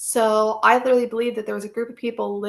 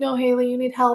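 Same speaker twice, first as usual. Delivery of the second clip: put-on tearful voice; 2 semitones higher than usual. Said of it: "he was full on crying".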